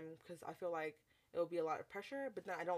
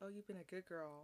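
whispered, much quieter; 7 dB quieter than usual. Describing what a partner said during sex, retelling a whisper.

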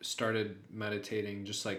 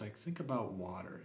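radio-host presenter voice; 6 dB quieter than usual. Describing guided meditation apps, quoting a guy in an NPR voice. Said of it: "in like an NPR voice".

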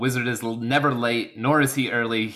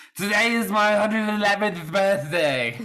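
put-on drunkenly slurred speech; 9 semitones higher than usual. Performing a scripted line marked as drunk speech for co-hosts; drunkenly slurred speech. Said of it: "drunkenly slurred speech".

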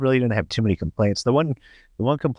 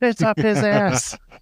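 scream, higher-pitched; 13 semitones higher than usual. Retelling a movie scene where a character starts screaming: imitating George Lopez screaming. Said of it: "George Lopez just starts screaming".

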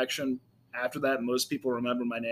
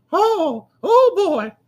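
very high, loud cartoon mouse voice. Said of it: "really good at Mickey Mouse voice".

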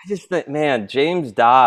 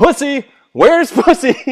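play-acted joyful, gleeful, very high shout; 5 dB louder than usual. Retelling an opposing coach reading out the pairings: imitating a gleeful smirking coach. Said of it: "with so much joy on his face".

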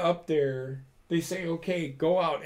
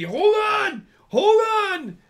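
shrill, very loud, high, drawn-out yelling; 9 dB louder than usual. Retelling how a man only watched and yelled at the speaker, imitating someone yelling. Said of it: "he's just yelling at me".

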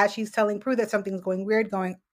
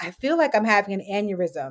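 ordinary talk, nothing marked

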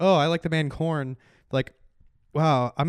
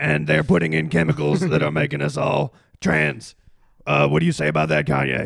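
put-on guttural ranting voice; 4 dB louder than usual. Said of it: "it's it's guttural".

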